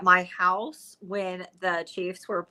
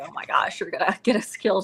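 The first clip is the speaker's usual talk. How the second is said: mock upset, agitated voice. Retelling how the speaker's now ex-husband reacted, imitating someone upset. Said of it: "my now ex-husband was very upset".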